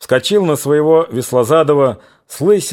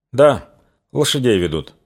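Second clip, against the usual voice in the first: plain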